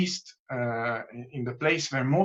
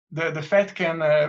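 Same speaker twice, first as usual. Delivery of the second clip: higher-pitched ironic sarcasm. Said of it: "I tell it with, uh, with some irony".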